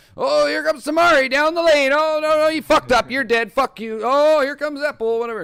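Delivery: very loud, very high play-by-play commentary yelling. Showing how he rambles for hours while drinking, yelling fast. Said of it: "I'm yelling so fast".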